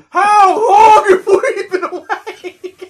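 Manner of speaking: shouting. Recalling opening the door at sunrise with friends, retelling a yell. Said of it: "And I just yelled".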